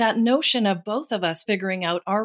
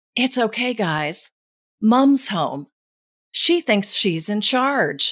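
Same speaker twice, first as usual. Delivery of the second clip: very loud stage whisper. Mom retells her husband telling the kids, in a loud stage whisper. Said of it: "he said in a very loud stage whisper".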